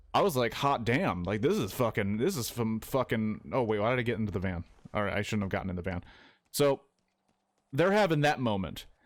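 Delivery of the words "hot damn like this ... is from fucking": usual speaking voice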